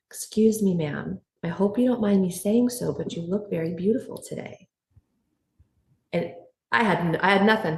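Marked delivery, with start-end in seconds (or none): 0.2-4.7 put-on small, shy, timid voice. Retelling what a man who wouldn't look her in the eye said, imitating a small shy voice. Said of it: "in a very small voice, almost shyly".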